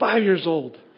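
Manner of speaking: play-acted, very proud, self-assured tone. Retelling answering a teacher's name question on the first school day: retelling own proud answer. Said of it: "very proudly I say".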